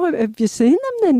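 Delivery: put-on thick Scottish woman's voice, very high, heavy accent. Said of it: "a very heavy Scottish accent".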